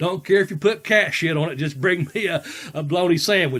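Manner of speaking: normal talking voice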